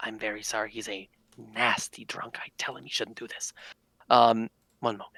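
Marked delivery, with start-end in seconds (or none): 0.0-3.5 very quiet mutter under the breath. Playing a character apologizing to two men about a drunk friend: muttering quietly in character. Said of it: "quietly enough that it's like, I don't want him to hear".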